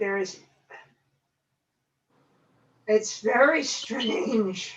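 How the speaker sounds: choked up, voice catching. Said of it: "I'm getting choked up here a bit".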